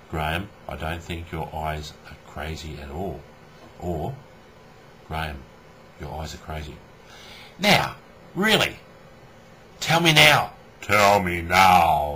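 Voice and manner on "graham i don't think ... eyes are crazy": dead-level, barely audible low monotone drone. Showing viewers what talking without animation sounds like, monotone voice. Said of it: "in a monotone voice like this".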